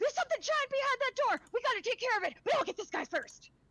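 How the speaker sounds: breakneck hyped-up shouting, very high and shrill. Voicing a hyped-up character on a stim pack: yelling very quickly and loudly. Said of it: "he yells out very, very quickly and loudly".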